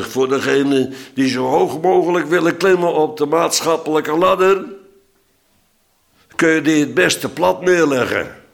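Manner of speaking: put-on Amsterdam accent in radio announcer style. A man calls out on a Tuesday evening radio show in the fifties, in an Amsterdam accent. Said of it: "En dan in Amsterdams accent".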